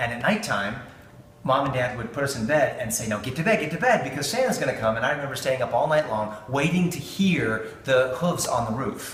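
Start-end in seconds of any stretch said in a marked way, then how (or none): none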